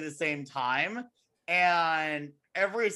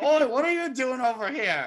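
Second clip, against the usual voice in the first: put-on cockney accent, high and raised pitch; 7 semitones higher, 5 dB louder than usual. Describing a Mickey and Minnie cartoon, quoting one of the birds, in a cockney accent. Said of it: "one of the birds who speaks with a cockney accent".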